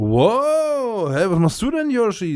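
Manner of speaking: wow stretched out, rising very high. Explaining how Yoshi's voice in the game sounds to them: Yoshi voice imitation. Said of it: "So klingt das für mich".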